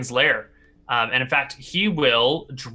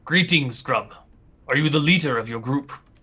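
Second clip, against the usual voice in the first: put-on blasé, indifferent, wise old man voice. Voicing a wise old scout greeting the group: blasé wise old scout. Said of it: "look at you all, sort of blasé".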